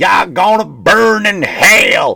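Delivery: very slow, loud, drawn-out Southern preacher yelling. Describing the stereotype people have of Christians: mock screaming southern preacher. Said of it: "screaming into a fucking audience with a Bible in his hand with a southern accent".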